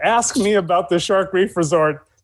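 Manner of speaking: plain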